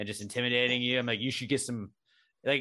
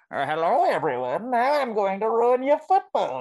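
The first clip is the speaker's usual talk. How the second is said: very high, loud, shrill, funny villain voice; 10 semitones higher, 7 dB louder than usual. Joking with co-hosts about Bane ruining a Steelers game, doing a funny Bane voice. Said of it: "a cool bad guy with a funny voice".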